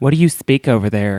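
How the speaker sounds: mock Alabama southern belle accent. Imitating a southern woman questioning a foreign man: imitating Alabama southern belle accent. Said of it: "talk like they're from Alabama".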